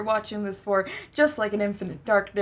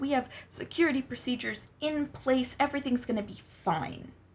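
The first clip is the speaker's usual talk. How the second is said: soft, exaggerated, over-the-top fake reassuring tone; 4 semitones higher, 5 dB quieter than usual. Recapping a story, acting out a character assuring a visitor, exaggerated mock-reassuring tone. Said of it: "You can tell by my tone of voice and my absolute exaggeration there".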